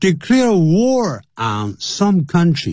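slow, high reading with "declare" stressed.

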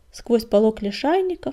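plain

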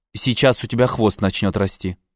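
ordinary delivery

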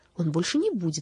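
plain

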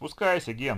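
loud call upward. Reading a story aloud, Sergey answers Gena from the boat below, calling up. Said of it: "задрав голову, ответил Сергей".

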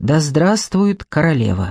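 ordinary talk

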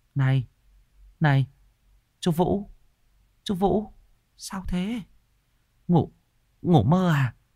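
shaky, trembling, high, slow voice. Narrator reads a woman slowly approaching Vũ: trembling voice. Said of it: "một bà chị từ từ tiến lại run giọng".

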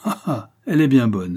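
sneer with a snicker running through it. Told where the travelers are going, a man answers, snickering. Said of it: "ricana Goupillard".

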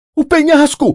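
high, breathless outcry, out of breath. Reading a story aloud, voice a character crying out; breathless outcry. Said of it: "Bradou sem fôlego".

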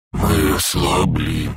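scary, low, frightening nightmare creature voice. Narrator voicing a nightmare creature hanging over an old woman's face, scary low voice. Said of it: "говорил кошмар страшным низким голосом".

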